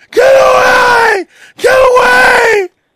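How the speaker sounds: very high, shrill, very slow drawn-out scream. Retelling how mom reacted as someone turned on the water, acting out her screaming. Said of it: "my mom was screaming".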